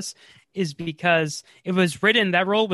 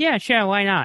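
put-on old man voice with a Brooklyn accent; 2 semitones higher than usual. Retelling how she agreed to a quick confessional: Natasha Lyonne impression. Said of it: "that's my Natasha Lyonne impression".

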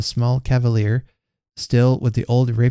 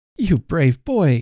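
glowing, proud, pitched-up cry; 5 semitones higher than usual. The children's mamma praises Hugh for taking up the sword: crying out proudly. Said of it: "cried the woman proudly".

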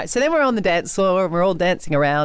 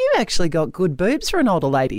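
mock deadpan delivery. Retelling what a teammate said to her on the dance floor, imitating a deadpan remark. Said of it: "comes up to me deadpan".

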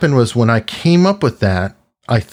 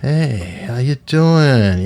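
slow, cool, late-night FM radio DJ voice. Speaker imitates the author of a book he recommends: late-night fm dj voice. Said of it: "he's got his late night FM DJ voice".

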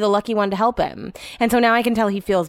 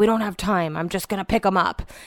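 put-on muttering under the breath. Retelling what someone said about lifting the boxes, imitating someone muttering. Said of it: "And he said it under his breath".

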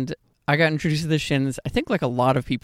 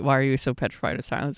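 ordinary talk, nothing marked

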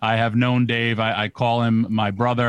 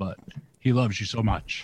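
choking up, quieter; 6 dB quieter than usual. Telling Jana how much Mark loves her, getting emotional. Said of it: "I'm getting emotional".

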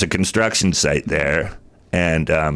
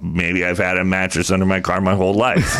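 ordinary talk

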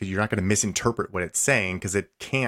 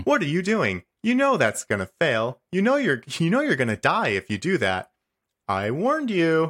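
cheerful, sweet, chirpy AI voice with wide pitch swings; 8 semitones higher than usual. Telling Randy about Portal, imitating the GLaDOS voice. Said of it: "she honestly talks kind of like this".

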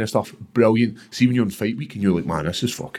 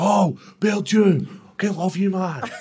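imitated shouting male voice, pitched higher; 10 semitones higher than usual. Retelling a man in the street calling out: imitating a man shouting. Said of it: "this guy shouts".

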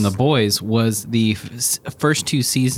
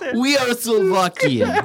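put-on Russian accent; 12 semitones higher than usual. Mimicking Slovakian people while joking about accents; put-on Russian accent. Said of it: "so I'm going to do the Russian".

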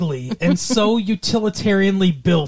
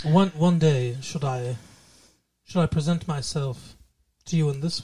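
low, put-on English accent; 5 semitones lower, 6 dB quieter than usual. Trying out an english accent to present oneself: put-on english accent. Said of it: "that's not a sexy English accent".

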